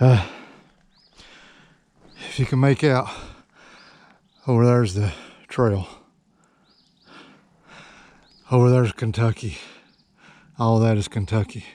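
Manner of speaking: winded, out of breath. A hiker still climbing to the top talks to viewers, out of breath. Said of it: "Sorry folks, I'm out of breath".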